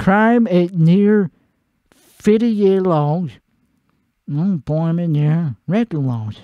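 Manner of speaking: very slow, plodding, deliberate reading aloud. Speaker reads aloud to show how fast they read; slow reading aloud. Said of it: "This is how fast I read".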